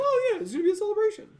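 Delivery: very high, loud mouse squeak. Retelling how another person said something, in a Mickey voice. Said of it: "he sounds like Mickey".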